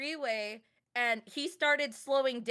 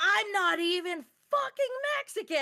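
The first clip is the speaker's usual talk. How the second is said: high, play-acted, furious, all-out screamed outburst; 8 semitones higher than usual. Retelling what was screamed back at a driver: retelling a scream. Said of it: "at the top of my lungs, I screamed".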